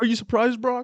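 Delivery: very high-pitched, loud, stumbling delivery. Retelling a wrestler's promo to another speaker: imitating Bobby Lashley stumbling over words. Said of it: "he was like".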